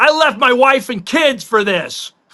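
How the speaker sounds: put-on high, furious, angry yelling. Retelling what a man yelled on the Tampa Bay sideline, retelling a yell. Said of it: "he was yelling".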